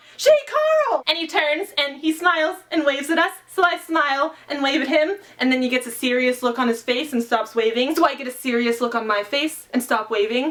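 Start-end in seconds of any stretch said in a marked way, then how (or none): 0.2-1.0 very high yell, sounding far away. Speaker retells a fellow booktuber yelling a name across a meetup. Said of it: "Benjamin of Tomes yells out".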